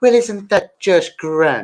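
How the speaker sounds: bad put-on Irish accent. YouTuber with Irish parents trying out their accent on stream, bad Irish accent. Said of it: "My Irish accent isn't very good".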